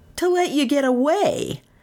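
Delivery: scornful sneer, pitched very high. Reading a story aloud, a young lawyer answers another man: sneering. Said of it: "the young lawyer sneered".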